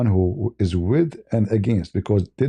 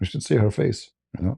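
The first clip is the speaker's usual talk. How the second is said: normal talking voice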